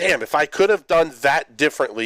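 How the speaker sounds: ordinary delivery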